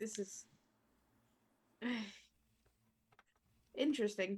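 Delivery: soft, sighing, weary aside. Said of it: "He, like, sighs".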